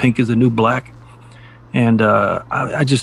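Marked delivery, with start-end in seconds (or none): none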